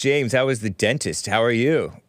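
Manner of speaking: usual speaking voice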